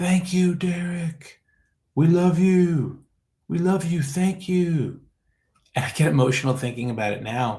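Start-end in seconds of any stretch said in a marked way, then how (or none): 0.0-5.0 high, loud screaming cheer. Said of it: "forty thousand people screaming".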